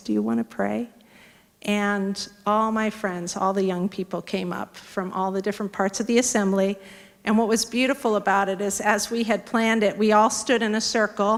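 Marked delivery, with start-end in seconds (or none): 0.0-0.9 wee, tiny, small little voice. Recounting standing before an assembly with empty hands out, in a tiny little voice. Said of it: "In this tiny little voice".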